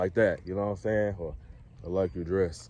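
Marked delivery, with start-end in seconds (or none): 1.8-2.7 down-talking, pitch dropping, lower and quieter. Demonstrating how the speaker says things: down-talking, pitch dropping. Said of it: "down talking".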